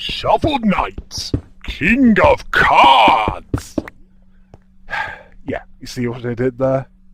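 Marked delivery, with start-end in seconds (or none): 0.0-3.8 booming, slow, huge voice. Announcing news on a game, in a Brian Blessed type voice. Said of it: "That's the Brian Blessed type voice I was going for".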